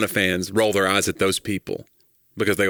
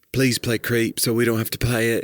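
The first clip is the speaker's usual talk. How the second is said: sulky, whining, petulant put-on English accent; 2 semitones higher than usual. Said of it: "my petulant English voice".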